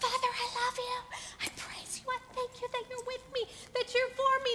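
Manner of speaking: high-pitched, shouted whisper. Retelling praying alone in the bathroom with hands raised: whisper-shout. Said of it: "whispering shout".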